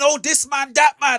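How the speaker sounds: put-on screaming. Mocking a rival's complaint about a failed business deal: imitating someone screaming. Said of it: "you start screaming".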